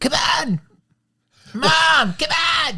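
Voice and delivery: put-on shrill, very high, loud, drawn-out screechy kid whine. Calling him the worst part of the movie, the speaker imitates a screechy voice. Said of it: "his screechy".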